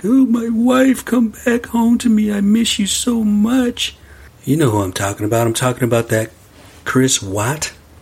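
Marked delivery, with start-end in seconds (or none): 0.0-4.0 very high, drawn-out fake weepy crying. Retelling a killer's fake crying on television: imitating Chris Watts fake crying. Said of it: "on television and fake cry like".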